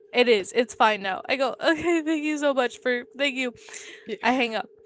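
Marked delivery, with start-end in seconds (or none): 1.6-3.5 high voice with a tearful sob throughout. Retelling thanking the woman on the call before hanging up, imitating own sobbing. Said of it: "You say that as you're sobbing".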